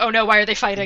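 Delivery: put-on panicked voice. Imagining being a worried character during a fight: pretending to panic. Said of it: "panicking, being like".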